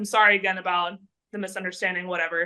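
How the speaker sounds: ordinary delivery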